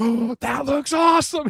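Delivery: very excited gush, very high-pitched. Retelling how Paul Giamatti reacted to a book: imitating someone sounding excited. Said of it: "He's, like, so excited".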